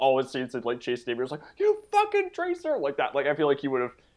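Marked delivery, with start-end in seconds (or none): 1.6-2.8 yelling in a very high register. Imitating an actor yelling in a high-pitched register. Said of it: "if he was in that register".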